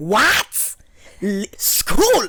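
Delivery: put-on screaming with Haitian accent. Imitating the speaker's mom screaming at the school secretary in a loud Haitian accent. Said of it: "Like screaming at the secretary".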